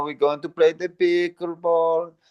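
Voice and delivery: put-on Italian-accented voice. Speaker imitates an acquaintance who talks this way, in a drawn-out italian accent. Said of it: "very drawn out and Italian".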